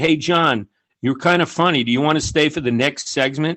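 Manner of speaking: ordinary delivery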